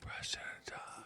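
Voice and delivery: hushed whisper. Talking with a co-host on the show, whispering. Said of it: "Why are we whispering again?".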